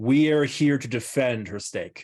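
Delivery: hugely loud, amplified-sounding booming yell. A character magically amplifies their voice to address everyone: booming loud voice. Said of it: "use my voice to boom out three times louder than normal".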